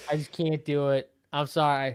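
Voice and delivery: normal talking voice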